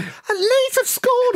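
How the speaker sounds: squeaky, very high early-twenties voice. Recalling the silent crowd after a goal, the speaker mimics his younger self: squeaky younger-self voice. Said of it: "squeaky early 20s me going".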